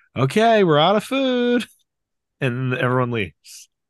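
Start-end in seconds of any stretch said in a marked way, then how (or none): 0.1-1.6 mock very high, drawn-out yell. Retelling how Al got on the couch to clear the house, yelling out. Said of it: "just yells out".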